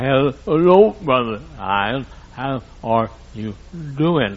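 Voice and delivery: slow, labored, impaired speech. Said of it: "she talked like this".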